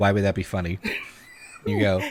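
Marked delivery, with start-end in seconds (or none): 0.0-0.8 very low, quiet, bone-dry deadpan monotone. Imagining a mom's reply to her child's joke, mock deadpan. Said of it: "did your mom just deadpan look at you and go".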